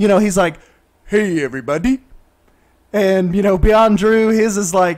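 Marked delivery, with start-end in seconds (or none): 1.1-2.0 deep baritone voice in a host style. Imitating a fellow creator's channel intro: imitating a deep baritone intro. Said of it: "a really deep baritone".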